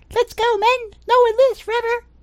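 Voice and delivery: very high, tiny, squeaky little voice. Narrating a fight, voicing the tiny voice you hear call out, tiny little voice. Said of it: "You hear a tiny little voice go".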